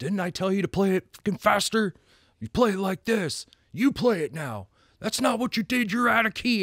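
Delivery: mock, unhinged, maniacal, very high-pitched rant. Speaker describing a movie to the other speaker, imitating the maniacal band teacher. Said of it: "he's just like this maniacal high school band teacher".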